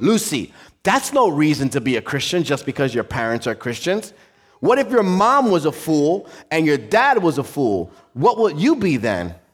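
angry, frustrated, exasperated lecturing tone. Retelling a teacher questioning a little girl: imitating an angry teacher. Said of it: "The teacher got really angry".

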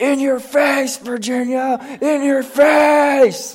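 shrill, very high, drawn-out scream. Retelling a football game where Eli screamed beside the speaker; imitating Eli screaming. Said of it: "he's screaming".

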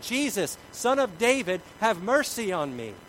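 high, loud, desperate shout.

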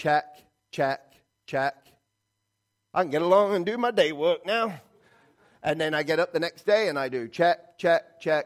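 mock self-satisfied tone.

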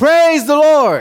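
bold, unashamed, very high, loud shout. Telling a story about a woman who shouts from her porch each morning; imitating someone shouting. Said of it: "she goes out on her porch and shouts".

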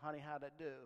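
ordinary talk, nothing marked

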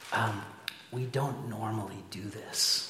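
very quiet, slow, hushed half-whisper. Retelling what a waiter said at the table: imitating someone half-whispering. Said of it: "he kinda whispers in my ear".

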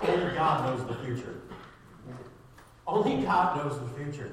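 loud, sarcastic delivery.

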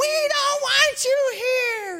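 very high, loud screaming yell. Recounting a woman going in circles at him, the speaker imitates someone yelling. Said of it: "she's yelling".

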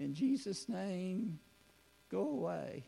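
timid, small, high-pitched mousy voice. Retelling a thirteen-year-old's words, in a small mousy voice. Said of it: "they said in their mousy kind of voice".

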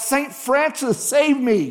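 high, very slow, very drawn-out cry. Telling of a falling man calling on a saint, acting out crying out. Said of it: "he cries out".

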